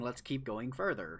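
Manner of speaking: put-on sarcastic voice. Repeating own earlier suggestion to the group: imitating own sarcastic words. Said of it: "I don't like the sarcasm in your voice".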